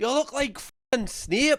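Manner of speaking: cutting, put-on Scottish accent. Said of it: "funnier in a Scottish accent".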